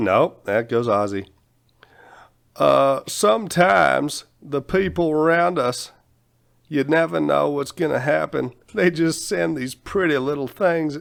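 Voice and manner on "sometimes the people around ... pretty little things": accent of the American South. Trying accents, one comes out as Bill Clinton: Southern Bill Clinton accent. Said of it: "Nope, that's Southern Bill Clinton".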